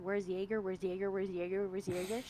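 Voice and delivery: very low, hushed mutter under the breath. Voicing a character who looks around for Jaeger: muttering under her breath. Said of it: "mutter under her breath".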